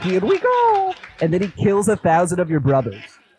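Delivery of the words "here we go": jolly, very high, chirpy delivery. Imagining a jolly voice saying the line: jolly Mario voice. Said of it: "imagine hearing a jolly voice saying".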